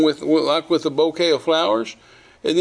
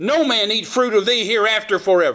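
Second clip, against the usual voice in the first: mock stern, harsh, unkind tone; 4 semitones higher than usual. Retelling a bible story, the speaker voices a man speaking to a tree; mock unkind tone. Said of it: "not a very nice tone of voice".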